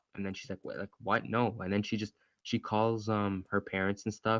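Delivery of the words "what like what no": ordinary talk, nothing marked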